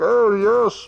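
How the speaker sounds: high, muffled villain voice. Showing another speaker a fists-over-mouth method: imitating Doug Walker's muffled Bane voice. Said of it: "makes fists and then puts that in front of his mouth".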